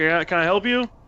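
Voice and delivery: calling out, high-pitched. A receptionist sees a group hanging around and addresses them, kind of shouting out. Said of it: "and just kind of shouts out".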